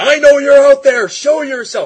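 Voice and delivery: shrill, very loud, high-pitched screaming. Retelling how Batman bursts into a construction area, imitating Batman screaming. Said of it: "Starts screaming".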